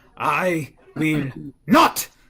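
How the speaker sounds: full-volume, very loud yelling shout. In a tabletop game, the game master voices a character's reply on her turn: shouting. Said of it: "she shouts something in Elvish".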